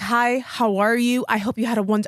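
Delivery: mock formal professional tone. Retelling a first phone call with a date: imitating an HR-style professional voice. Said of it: "I was H R".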